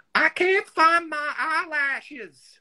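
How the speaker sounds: very high, slow, drawn-out screech. Retelling a screech heard from the bedroom before a shoot: Carol's famous voice. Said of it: "she says in that famous voice".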